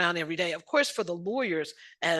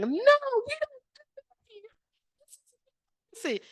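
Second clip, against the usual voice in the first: mock crying, higher. Retelling crying at dinner with a friend: retelling own crying. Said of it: "I immediately started, like, crying".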